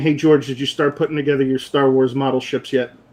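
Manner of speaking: usual speaking voice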